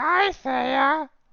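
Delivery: creepy, scratchy semi-robot voice, very high. Game master voices what Thea hears on entering the door: creepy semi-robotic scratchy voice. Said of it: "a creepy, very semi-robotic, scratchy voice that says".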